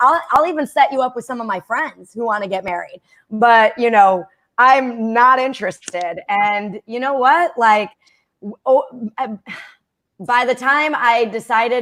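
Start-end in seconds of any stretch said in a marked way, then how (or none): none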